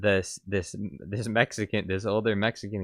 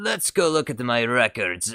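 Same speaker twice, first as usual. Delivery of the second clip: clumsy, not very good put-on Italian accent; 4 semitones higher, 4 dB louder than usual. Testing a line again to see if it works, in a bad Italian accent. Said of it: "you gotta try and imitate an Italian accent".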